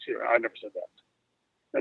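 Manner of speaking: very slow, low half-whisper under the breath. Retelling a phone call about unpaid checks: imitating a half-whisper under her breath. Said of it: "she whispered under her breath".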